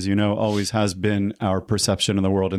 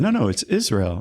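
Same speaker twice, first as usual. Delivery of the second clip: proud voice; 2 semitones higher than usual. Retelling a phone call, answering where the number is from: retelling a proud reply. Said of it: "Proudly, I said".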